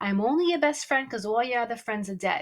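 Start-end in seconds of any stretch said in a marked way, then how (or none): none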